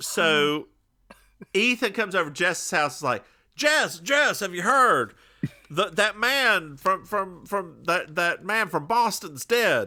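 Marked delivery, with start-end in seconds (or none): 3.5-9.9 put-on Southern accent. Quoting what a character says on arriving at a friend's house: Southern accent. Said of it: "why does he have a Southern accent?".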